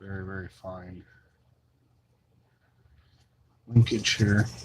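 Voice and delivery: speaking very softly. Pointing out fine linkage while explaining a paint job: very quiet voice. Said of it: "Your voice is very quiet all of a sudden".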